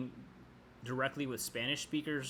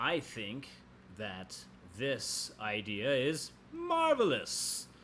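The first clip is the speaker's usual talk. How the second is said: unhurried words, then marvelous stressed and louder; 3 dB louder than usual. Showing you can take your time in english: louder marvelous after slow words. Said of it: "The marvelous kind of popped a little bit more because I said it louder".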